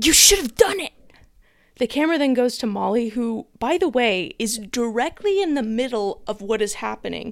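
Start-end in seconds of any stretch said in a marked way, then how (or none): 0.0-0.9 put-on forceful stage-whisper shout. Retelling a reality show challenge, quoting a participant across the fire: imitating a whisper-yell. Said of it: "basically whisper yells".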